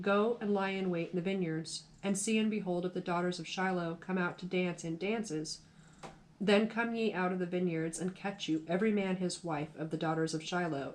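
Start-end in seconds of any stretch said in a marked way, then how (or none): none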